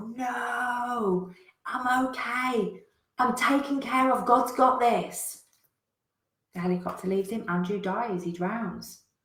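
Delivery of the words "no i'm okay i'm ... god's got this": play-acted very slow, high shout, long drawn-out "no". Telling a story, the speaker acts out Andrew shouting up to the helicopter. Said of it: "And Andrew shouts up".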